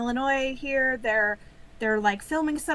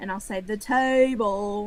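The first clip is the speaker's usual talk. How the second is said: drawled Southern accent; 3 semitones lower than usual. Speaker showing how they say 'table', which someone always jokes about, in a southern drawl. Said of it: "the southern drawl".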